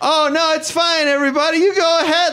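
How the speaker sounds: very high, embarrassed, flustered yell. Retelling trying to get ahead of the humiliation in front of everyone, re-enacting yelling. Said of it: "I'm just yelling stuff".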